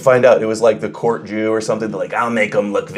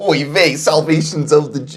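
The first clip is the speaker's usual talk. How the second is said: put-on, pitched-up New York accent; 6 semitones higher than usual. Pitching voices for reading verses, the speaker suggests one for Jesus: New York rabbi voice. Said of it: "a rabbi from New York".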